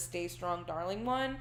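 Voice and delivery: normal talking voice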